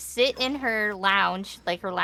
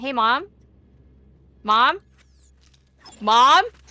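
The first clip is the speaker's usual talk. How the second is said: put-on voice, repeated, growing louder each time; 2 semitones higher, 8 dB louder than usual. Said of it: "I got less polite and louder".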